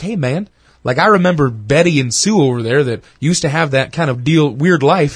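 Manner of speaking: ordinary talk, nothing marked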